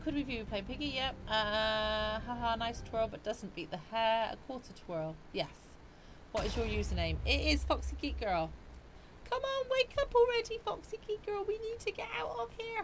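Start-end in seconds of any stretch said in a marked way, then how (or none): 9.3-12.8 put-on tiny, squeaky, very high cartoon toddler voice. Playing Piggy on stream, urging Foxy Geek Girl to wake up, in a George Pig voice. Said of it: "That's my George Pig voice".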